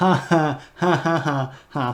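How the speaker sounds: high-pitched fake, mock laugh.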